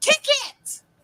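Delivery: play-acted, very high, loud, shouted yell. Retelling a story from a Tourette's camp, someone in the front row yells: imitating someone yelling. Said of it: "you hear somebody in the front row yell".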